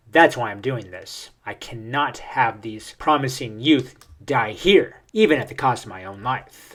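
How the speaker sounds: normal talking voice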